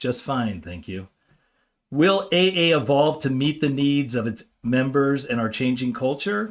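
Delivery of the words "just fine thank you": hushed, quiet, low, understated voice. Telling an AA joke, the old timer answers the newcomer in a quiet voice. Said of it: "in a quiet voice".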